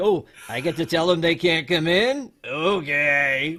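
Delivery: creepy voice, drawn-out "okay". Retelling a movie scene with a security guard: imitating a creepy security guard. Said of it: "also puts off a really creepy vibe".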